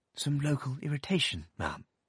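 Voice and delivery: said sweetly. A man repeats himself to the narrator's abrupt aunt, sweetly. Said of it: "But he repeated, sweetly".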